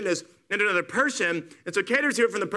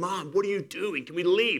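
put-on mortified, embarrassed teenager voice; 2 semitones lower, 3 dB quieter than usual. Acting out a child embarrassed by their dad: imitating an embarrassed teenager. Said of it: "you're thinking".

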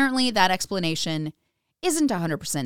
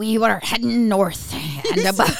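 loud, put-on old sea captain voice; 5 dB louder than usual. Urged by the others to give it a go, speaker reads in an old sea captain voice. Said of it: "I always say it in like what I consider an old sea captain voice".

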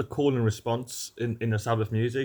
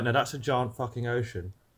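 ordinary talk, nothing marked

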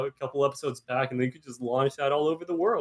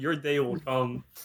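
ordinary talk, nothing marked

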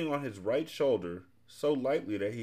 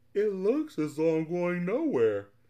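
sleepy, drowsy yawning words, pitched up; 8 semitones higher, 4 dB louder than usual. A driver on an endless winding road yawns, becoming drowsy. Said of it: "yawned Milo".

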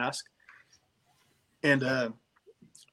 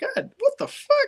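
very high, loud, slow, drawn-out, shocked laughing shriek. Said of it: "it's just like".

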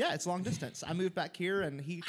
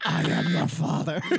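masked villain voice, louder; 10 dB louder than usual. Joking with the others about how their tops sound, Darth Vader voice. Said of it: "I love it when my tops sound like Darth Vader".

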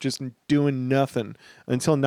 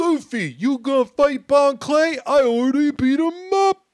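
Brooklyn accent spoken at a very high pitch; 13 semitones higher, 3 dB louder than usual. On a podcast, a host voices Sanji speaking to Luffy: Brooklyn-accent Sanji impression. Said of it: "is Brooklyn Sanji".

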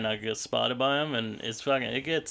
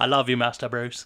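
put-on British butler voice, louder; 5 dB louder than usual. Doing a quote from the butler character: Michael Caine voice. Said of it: "you have a Michael Caine".

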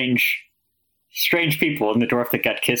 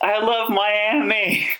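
high-pitched shout with "Miami" long and drawn out; 9 semitones higher than usual. Retelling what someone yells at newcomers at a pride parade, retelling a yell. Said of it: "someone just like yells".

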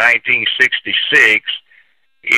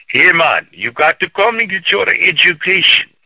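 put-on Jamaican accent, pitched somewhat higher; 7 semitones higher than usual. Recalling how a man talked when you met him on a field trip, in [name]'s Jamaican accent. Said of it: "he had a Jamaican accent".

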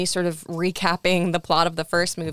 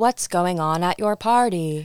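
imitated robot or computer voice. Retelling a scene where a chat computer talks: imitating a robot voice. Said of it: "we hear this robot voice being like".

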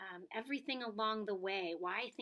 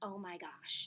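soft, hushed, under-the-breath stage whisper; 2 semitones lower than usual. Retelling how the teacher reacted across the room: imitating someone half-whispering. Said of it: "she was whispering".

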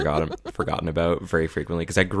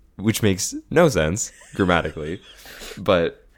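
usual speaking voice

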